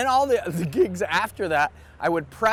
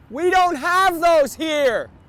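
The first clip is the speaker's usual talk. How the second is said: acted, shrill, very high, loud heckling shout; 10 semitones higher, 5 dB louder than usual. Retelling an audience member's heckle during a stand-up act: imitating someone screaming.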